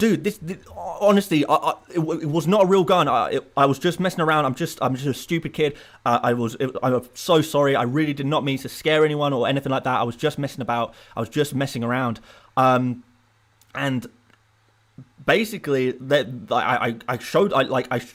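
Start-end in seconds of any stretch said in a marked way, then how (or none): none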